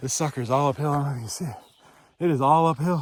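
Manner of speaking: huffing and puffing, out of breath. Going up an uphill stretch, the speaker talks to viewers, huffing and puffing. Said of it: "That's why I'm huffing and puffing".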